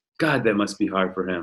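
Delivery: put-on mutter under the breath. Retelling a colleague's remark about his friend's law school: imitating someone muttering under breath. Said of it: "under his breath".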